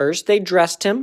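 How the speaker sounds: ordinary delivery, nothing marked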